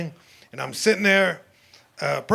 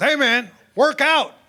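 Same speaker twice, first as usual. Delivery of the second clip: hollered, pitched-up shout; 8 semitones higher, 4 dB louder than usual. Retelling how his homie yelled at him while he walked around; retelling a yell. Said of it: "he yells at me".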